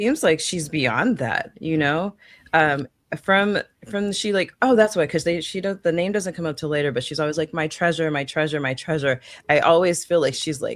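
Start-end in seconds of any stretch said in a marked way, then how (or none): none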